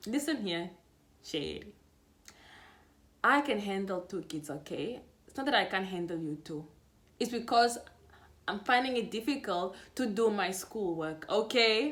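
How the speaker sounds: sharp, sassy tone full of attitude. Retelling own reply to a daughter: retelling own reply with attitude. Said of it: "I'm trying to give her attitude now".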